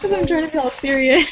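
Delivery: laughing while talking. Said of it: "Now I can't stop laughing".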